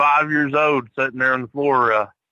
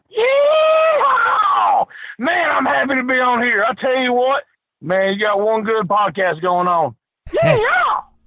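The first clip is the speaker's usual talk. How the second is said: thrilled, very high, swooping, animated excited chatter; 11 semitones higher than usual. Podcast guest just welcomed on by the host, excited. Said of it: "You sound really excited to be on tonight".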